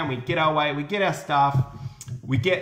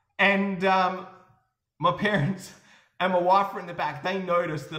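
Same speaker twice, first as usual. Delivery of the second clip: ordinary talk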